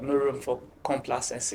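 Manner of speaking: ordinary talk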